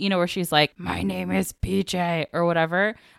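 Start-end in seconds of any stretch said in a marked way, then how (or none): 0.8-2.3 very slow, rough, creaky, gravelly drawl. Describing how a possessed girl spoke, the speaker imitates a gravelly Anna Faris voice. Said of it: "in that gravelly voice".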